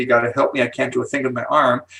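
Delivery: ordinary delivery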